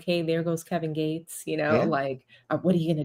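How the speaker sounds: hushed, quiet half-whisper. Retelling a player half-whispering to LeBron courtside: imitating Morris half-whispering. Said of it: "you see him whispering to LeBron courtside".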